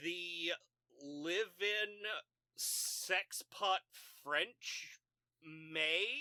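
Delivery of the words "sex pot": ordinary delivery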